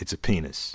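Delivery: grave, very low, dead-serious delivery. Retelling granddad's answer to a joking question: imitating a dead-serious reply. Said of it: "he said it in such a way".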